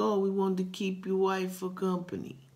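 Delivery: put-on Italian accent. Retelling what the dudes in his living room said: put-on italian accent. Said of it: "Pardon my Italian accent".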